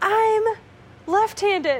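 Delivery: play-acted, high, loud screaming outburst. Retelling a clue game, the speaker imitates Jesus screaming his answer. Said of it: "Jesus is screaming".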